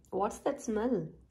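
ordinary delivery

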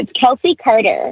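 word said in an American accent. Giving her social handle, repeating her name for Americans in an American accent. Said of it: "for the Americans who can't understand me".

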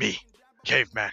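put-on caveman voice. Joking after winning a round, copying a character's face: put-on caveman voice. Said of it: "it's just the way your character's face".

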